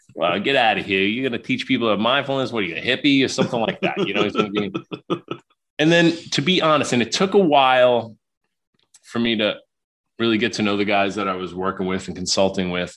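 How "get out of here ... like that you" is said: bad New York accent, faster. Retelling what the guys he worked with said, in a horrible New York accent. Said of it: "My horrible New York accent".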